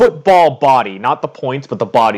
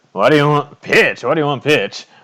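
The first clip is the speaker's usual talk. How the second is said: put-on older man character voice, much higher; 4 semitones higher than usual. Voicing the man the group asks for pitch: older Triton man voice. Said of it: "an older Triton comes out".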